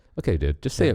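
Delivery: ordinary talk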